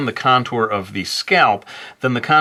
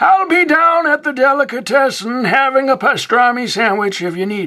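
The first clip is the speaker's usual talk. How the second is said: put-on old man voice, higher and louder; 4 dB louder than usual. Voicing Old Man Time Lapse leaving for lunch: Grampa Simpson voice. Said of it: "grandfather from The Simpsons".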